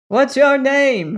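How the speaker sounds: high, shouted, calling-out voice. Burton calls out to a figure that ignored Crane: shouted. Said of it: "shouted Burton".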